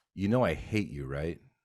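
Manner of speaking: ordinary talk, nothing marked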